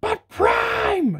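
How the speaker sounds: very high-pitched robot toy character voice. Imagining what the toy robot would say: Ironhide voice. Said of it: "I can just hear this guy saying".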